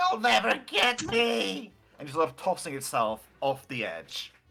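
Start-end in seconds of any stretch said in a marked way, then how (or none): 0.0-1.7 very slow, high, drawn-out top-of-the-lungs goblin yell. Voicing a fleeing goblin leaping off the edge: goblin yelling at top of lungs. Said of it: "yelling at the top of his lungs".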